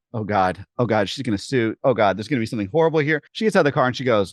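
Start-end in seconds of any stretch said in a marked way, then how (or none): none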